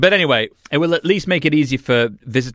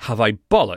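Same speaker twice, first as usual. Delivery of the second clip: put-on muttering under the breath. Answering the sandwich shop machine's card question, imitating muttering under breath. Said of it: "under my breath".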